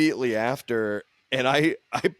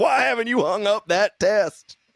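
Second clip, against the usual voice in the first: loud yell, pitched up; 8 semitones higher than usual. Retelling a story where the dad yells at the son, retelling the dad's yell. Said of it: "kept coming in and yelling at the son".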